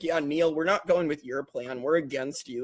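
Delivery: put-on cocky, dismissive tone. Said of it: "why are you this cocky".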